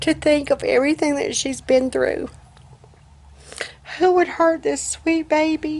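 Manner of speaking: crying, voice cracking. Telling how a trusted woman hurt their pet on a leash, crying. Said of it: "I'm crying".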